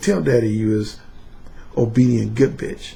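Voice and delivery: smooth, silky seductive tone without harshness. Showing how he talks to submissives, in a smooth seductive tone. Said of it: "There's no harshness in the tone. It's very smooth and seductive".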